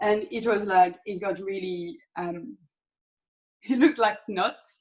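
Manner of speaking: words broken up by laughter while talking. Speaker describing a banana face mask that turned out gross, laughing while talking. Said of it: "I'm laughing of my own stupid video".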